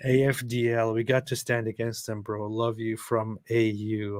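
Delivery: normal talking voice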